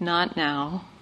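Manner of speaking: very gentle, soft, tender tone with no edge. Retelling what one said to oneself: imitating a very gentle tone. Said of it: "with a very gentle tone".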